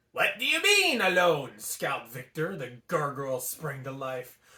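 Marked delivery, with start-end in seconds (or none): 0.1-1.5 put-on French accent. Reading a story aloud, voicing a gargoyle: French accent. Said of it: "we're going with the French accent today".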